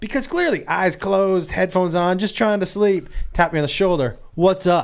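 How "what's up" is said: higher-pitched voice full of attitude. Retelling answering a tap on the shoulder mid-flight: retelling own reply with attitude. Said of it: "me with the attitude".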